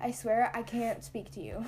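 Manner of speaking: usual speaking voice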